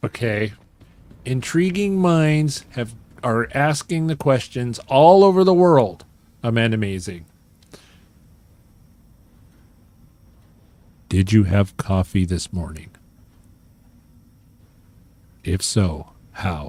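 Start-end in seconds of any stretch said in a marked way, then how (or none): 6.4-16.7 low, creepy male voice. Speaker reads out an audience question, in a creepy man voice. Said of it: "creepy man voice".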